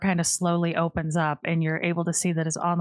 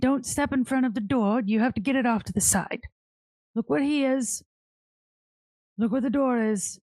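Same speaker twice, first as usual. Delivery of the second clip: disappointed voice, higher; 6 semitones higher than usual. Voicing Morty, who scolds Charlie about the trapped door: Morty voice, disappointed. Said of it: "Morty looks at you, Charlie, and goes".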